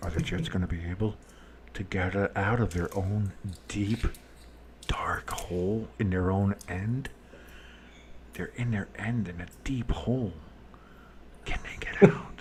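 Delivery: soft, low mock ASMR-style whisper. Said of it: "I should do A S M R though".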